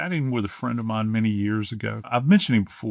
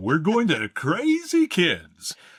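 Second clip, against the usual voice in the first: animated, swooping radio announcer voice; 7 semitones higher than usual. Retelling how he voiced an ad for a fireworks stand, radio announcer voice. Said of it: "my radio voice and I'd go".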